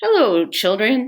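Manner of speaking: sweet-voiced delivery. Narrator reads someone greeting the children, in a sweet voice. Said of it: "someone said in a sweet voice".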